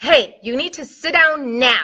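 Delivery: commanding, authoritative voice. A speaker demonstrates how adults command children, in a commanding authority voice. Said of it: "voice and language".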